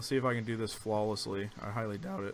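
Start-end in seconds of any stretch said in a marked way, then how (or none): 1.6-2.3 cracked voice, lower and quieter. Getting ready to bring another speaker onto the call: voice cracking. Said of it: "My voice just cracked".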